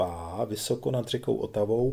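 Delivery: ordinary delivery, nothing marked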